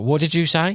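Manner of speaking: high, play-acted shout, calling out. Retelling asking a whispering fishing mate to repeat himself: retelling own shout. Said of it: "I'd shout at him".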